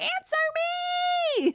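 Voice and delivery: mock very high-pitched scream, me drawn out long. Retelling a movie scene of a character screaming for her friends: imitating someone screaming. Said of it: "when she's screaming for them".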